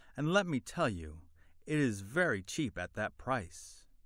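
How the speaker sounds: ordinary delivery, nothing marked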